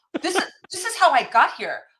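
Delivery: put-on indignant voice. Retelling an argument with cops about parking a van: retelling own indignant protest. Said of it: "I was very, uh, indignant".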